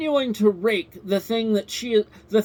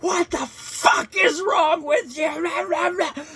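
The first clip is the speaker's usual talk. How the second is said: mock spitting-mad, furious, high scream, "you" drawn out; 7 semitones higher than usual. Retelling how a woman screams at a man holding cake; retelling a furious scream. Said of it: "like spitting fucking mad".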